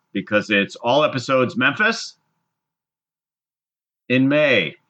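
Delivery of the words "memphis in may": suspenseful pause before "in may", with swooping pitch. Joking that legally there must be a dramatic pause, pause before in May. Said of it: "I think legally we have to have the dramatic pause in there".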